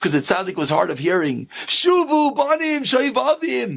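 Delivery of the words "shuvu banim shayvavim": high, screaming preacher-style delivery. Retelling a tape recorder playing a talk loudly, imitating a recording screaming. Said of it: "a Musar shmooze screaming".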